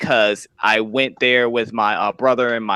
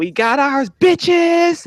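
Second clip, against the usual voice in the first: put-on play-acted very high, drawn-out, tipsy triumphant yell; 3 dB louder than usual. Retelling the moment Tiffany walked out of the store, imitating Tiffany screaming. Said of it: "she was just screaming it".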